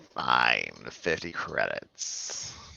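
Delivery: very low, rough, creaky growl. Quoting him as he agrees to fifty credits, retelling a growl. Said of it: "he growls like".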